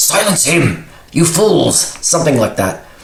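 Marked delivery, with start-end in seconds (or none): 0.0-1.8 hissing. A prisoner goads the others against the evil jailer: hissing as Secundus. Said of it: "he hisses at these at the other prisoners and says".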